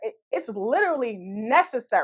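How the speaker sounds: plain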